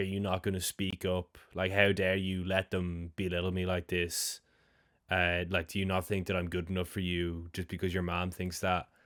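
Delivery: normal talking voice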